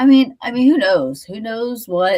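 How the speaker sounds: words spoken through yawn. Chatting mid-morning and apologizing for yawning so much, yawning. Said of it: "I don't know why I'm yawning so much".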